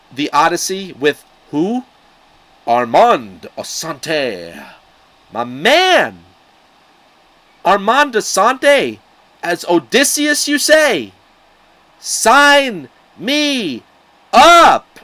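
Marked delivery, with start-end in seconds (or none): 5.4-14.8 very high, rising, full-voice, all-out screaming. Comparing two film versions of The Odyssey, screaming. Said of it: "Sorry for screaming".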